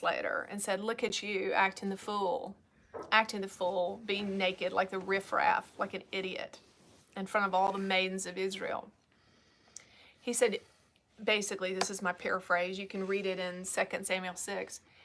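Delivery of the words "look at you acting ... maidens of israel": ordinary talk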